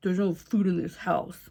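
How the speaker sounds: low, gruff, grumbling dad voice. Speaker tries out a possible character voice for the group: gruff dad voice. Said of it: "I'm a gruff dad".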